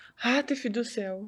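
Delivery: soft, slow, gentle motherly voice. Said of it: "ela imitando o que ela fez na época".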